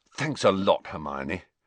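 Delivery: plain reading voice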